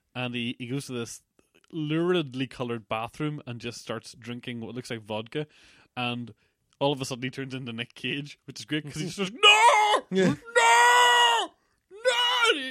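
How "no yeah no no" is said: very loud, very high, drawn-out scream. Act out a man drinking in a bathroom, screaming at no one, imitating Nick Cage screaming. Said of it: "he's screaming at no one in particular".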